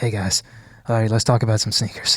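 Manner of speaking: hushed whisper under the breath. Imitating a guest whispering a greeting with his wife nearby: imitating Daniel whispering. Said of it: "whispering in his".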